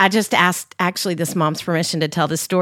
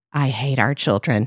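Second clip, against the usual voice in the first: low remark muttered under the breath; 5 semitones lower than usual. Retelling a husband's remark during a family photo: imitating a remark under his breath. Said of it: "under his breath".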